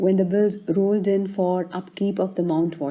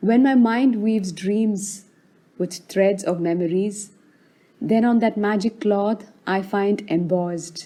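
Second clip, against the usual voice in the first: ordinary delivery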